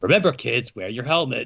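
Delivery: very authoritative, commanding soldier voice. Voicing a character who warns kids: very authoritative voice. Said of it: "a very authoritative, like, uh, voice".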